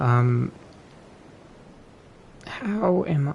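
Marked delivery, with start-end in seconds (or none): 2.5-3.3 voice breaking and cracking. After greeting the Federal Bureau of Investigation, speaking with a voice crack. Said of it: "that was a voice crack and a half".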